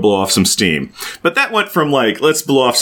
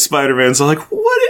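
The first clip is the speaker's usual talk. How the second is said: normal talking voice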